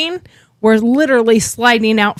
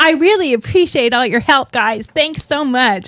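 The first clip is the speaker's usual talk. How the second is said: mock sweet-talking, sugary, overly nice polite voice; 3 semitones higher than usual. Retelling thanking the men for their help: imitating own put-on polite voice. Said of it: "have you ever heard me talk like that?".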